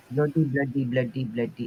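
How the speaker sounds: almost Indian, faint accent. Streamer repeating one phrase over and over, slipping into an almost Indian accent. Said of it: "Now I almost sound Indian".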